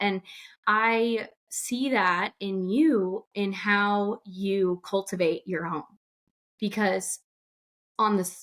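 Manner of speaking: slow, emotional, overcome with feeling. Speaking to the other person, the speaker is getting emotional. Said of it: "I'm getting emotional".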